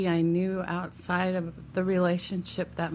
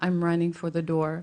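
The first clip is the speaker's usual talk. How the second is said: ordinary talk, nothing marked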